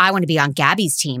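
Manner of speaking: ordinary talk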